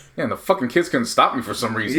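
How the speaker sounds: normal talking voice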